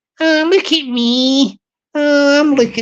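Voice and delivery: wee Glasgow woman's voice and accent. Doing a woman talking to herself before going shopping, in a Glaswegian woman voice. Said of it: "her talking to herself in Glaswegian voice changer mode".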